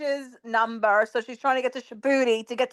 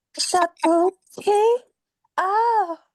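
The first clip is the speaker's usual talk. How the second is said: put-on woman's voice, higher; 6 semitones higher, 3 dB louder than usual. Showing that anyone could fake her voice messages: imitating her voice. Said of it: "I can do her voice too".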